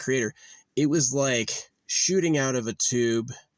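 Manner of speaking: plain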